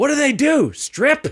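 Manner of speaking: put-on outraged, furious voice, very high and slow. Retelling a father's reaction to working at a comedy club: imitating a furious dad. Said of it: "my dad was so furious".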